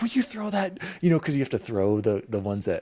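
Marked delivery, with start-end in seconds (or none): 0.0-0.8 very high, excited yelling with the voice way up. Retelling gaming together, yelling at the other player to throw. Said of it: "you'd hear me yelling at you".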